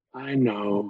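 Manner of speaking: acted soft, sad, resigned voice. Retelling how a woman caring for her mother answered advice, mimicking a sad, resigned reply. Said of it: "in like a sad, resigned voice".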